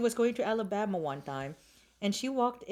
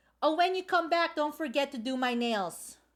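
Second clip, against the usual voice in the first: mock snide, taunting screaming call; 5 semitones higher than usual. Retelling what the host called out across the room: imitating someone screaming. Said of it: "she screamed out".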